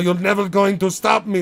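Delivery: put-on high Russian accent. Voicing Wilford Brimley as the rhino villain: Wilford Brimley with Russian accent. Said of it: "Why is Wilford Brimley talking with a Russian accent?".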